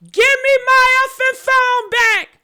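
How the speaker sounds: mock, high-pitched, hollered screaming outburst. Retelling how Nolan demanded his phone back: imitating Nolan screaming. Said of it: "he started screaming".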